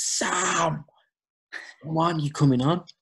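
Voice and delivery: put-on very high, drawn-out calling scream. Retelling how the assistant called to the bench: imitating someone screaming. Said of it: "the assistant turns around and screams".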